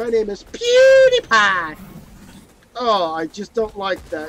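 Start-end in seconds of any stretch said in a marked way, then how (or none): 0.0-1.7 belted out, pitch swooping wildly. Comparing two YouTubers' intros: PewDiePie impression. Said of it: "when PewDiePie does it, he goes like".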